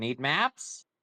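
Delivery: rising, questioning intonation. Playing a character who points at the captain: questioning tone. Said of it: "in a questioning tone".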